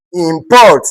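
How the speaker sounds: import with second-syllable stress, verb style. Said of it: "that is a verb".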